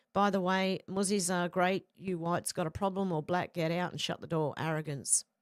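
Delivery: normal talking voice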